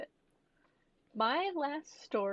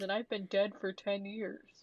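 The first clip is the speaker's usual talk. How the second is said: ordinary talk, nothing marked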